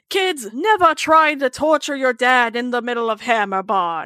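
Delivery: terrible, bad Australian accent. Imagining a cartoon dad's warning line: terrible Australian accent as Bandit. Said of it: "that was a terrible Australian accent of me".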